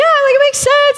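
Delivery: voice shooting up to very high pitch. Retelling what the husband said when confronted: imitating husband's higher voice. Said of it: "his voice got higher".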